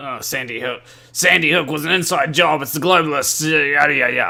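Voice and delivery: very loud, booming put-on voice at full volume. Retelling what someone claims about Sandy Hook: Alex Jones impression. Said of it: "my Alex Jones impression".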